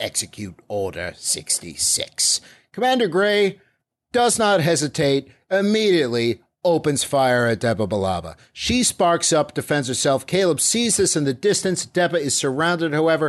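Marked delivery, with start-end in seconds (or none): 0.0-2.4 quiet, low, slow voice. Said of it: "Hollow Palpatine saying".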